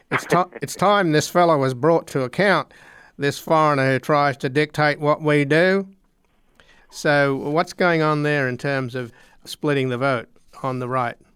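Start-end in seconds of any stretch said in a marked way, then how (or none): 0.1-5.8 put-on Australian accent. Having offered to redo a man's quoted words, repeat them in a put-on australian accent. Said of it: "I could do it in an Australian accent if you like".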